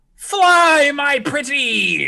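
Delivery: very high screeching shriek, "fly" drawn out. Narrator voicing a character who launches something into the air, screaming. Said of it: "She screams".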